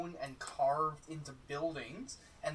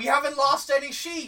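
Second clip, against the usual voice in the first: shrill, full-throated, very loud, high shout; 11 semitones higher, 14 dB louder than usual. A man answers the players' call about lost sheep, shouting back. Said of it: "He shouts back in an equal tone".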